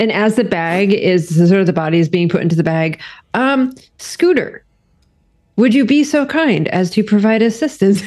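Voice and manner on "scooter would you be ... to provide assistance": dripping with sarcasm. Voicing a character politely asking Scooter for help: super sarcastic. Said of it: "Super sarcastically".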